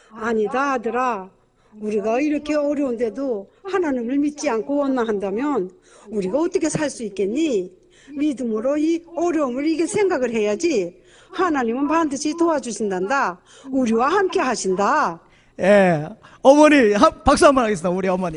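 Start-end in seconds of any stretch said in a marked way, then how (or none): 0.2-15.2 put-on North Korean accent and speech patterns. A dubbed mother speaking to her son, North Korean accent. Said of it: "북한 말투 너무 잘하셔서".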